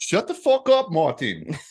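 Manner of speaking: awful fake Australian accent, very high, shrill and loud. Joking about a driver, speaker scolds him in a terrible Australian accent. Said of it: "That was a terrible Australian accent".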